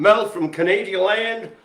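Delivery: accent slipping toward a Texan sound. Greeting people by name as they show up: sounding Texan. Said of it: "I sounded more like a Texan there".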